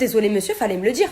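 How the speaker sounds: calm, even-tempered, courteous tone. Recounting an argument with a man over a window button, retelling a calm reply. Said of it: "Ça je lui dis calmement".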